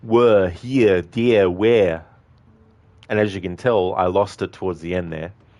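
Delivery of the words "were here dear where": put-on Austrian accent, slow and raised in volume. Showing how he says tricky words like were and where, Arnie impression accent. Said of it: "my Arnie impression".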